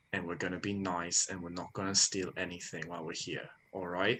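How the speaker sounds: hushed whisper. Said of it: "I want to whisper".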